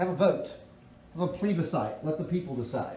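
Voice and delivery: normal talking voice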